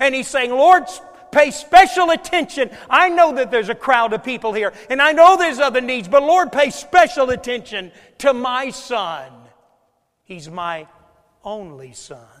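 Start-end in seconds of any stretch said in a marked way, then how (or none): 0.5-9.3 very loud, swooping shouting cry. Retelling a father on his knees calling to the lord for his son, retelling a father crying out. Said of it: "he's crying out, he's shouting".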